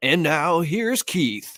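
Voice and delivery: botched mock radio announcer voice, high, slow, stretched out. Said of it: "the radio show announcer voice".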